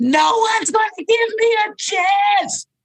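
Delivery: very high, drawn-out, full-lunged scream. Retelling what a job seeker shouted on the street: imitating a scream at full volume. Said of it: "he screams at the top of his lungs".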